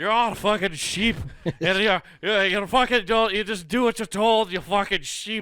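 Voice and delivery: put-on Irish accent, sounding drunk. Acting out a whiskey-drinking man ranting at people he calls sheep, in a mock-drunk Irish accent. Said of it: "try to do an Irish accent but sound drunk".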